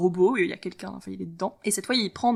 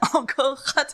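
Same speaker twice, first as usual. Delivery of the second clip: put-on German accent, pitched up, speaking French; 6 semitones higher than usual. A speaker delivers a short quip to a co-speaker, German accent. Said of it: "J'ai fait un accent allemand".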